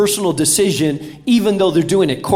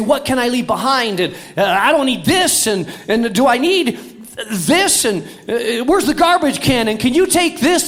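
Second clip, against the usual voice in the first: put-on panicked, frantic voice; 6 semitones higher than usual. Describing travelers with overweight bags, imitating a panicked traveler. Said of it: "in a very panicked way".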